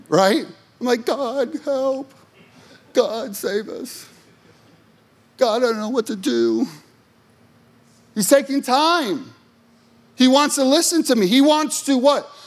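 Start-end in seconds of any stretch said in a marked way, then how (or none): 1.0-6.6 put-on whiny, pleading voice. Speaker acting out their own prayers to God, in a put-on whiny voice. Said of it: "in my whiny voice".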